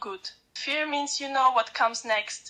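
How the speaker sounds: normal talking voice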